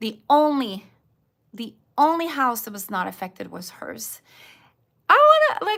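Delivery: emotion spilling over, very high and loud. Retelling a woman's story about a storm, speaker is getting emotional. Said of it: "I'm getting emotional".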